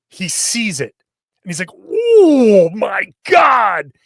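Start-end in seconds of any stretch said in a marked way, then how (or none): 1.7-3.8 slow, loud, stunned "oh my God" gasp.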